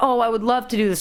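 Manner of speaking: ordinary talk, nothing marked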